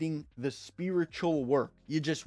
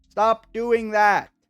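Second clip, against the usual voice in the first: yelling, shouting, higher-pitched and louder; 7 semitones higher, 11 dB louder than usual. Urging listeners to stop scrolling and streaming: yelling. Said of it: "I'm yelling because this is important".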